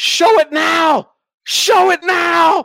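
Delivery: shrill, excited, amped-up yelling, very loud and high. Retelling how a man yelled at a movie trailer, imitating someone yelling. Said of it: "he was yelling".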